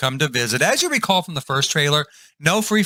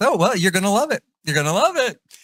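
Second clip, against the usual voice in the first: sarcastic mock enthusiasm, much higher pitch; 5 semitones higher than usual. Acting out a trailer scene as the one offering the drink, sarcastic mock enthusiasm. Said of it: "I'm being sarcastic".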